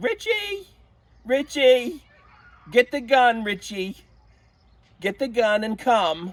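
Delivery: shrill, booming, swooping, high, drawn-out urgent shout. Retelling his mother calling to him in the back bedroom, in a loud voice. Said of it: "in a loud voice".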